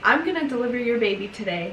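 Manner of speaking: ordinary talk, nothing marked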